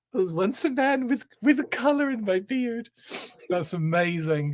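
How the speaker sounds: high, tearful laughing, crying with laughter. Reacting to what was just said, crying with laughter. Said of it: "I'm crying at that".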